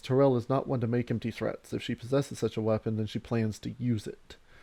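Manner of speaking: normal talking voice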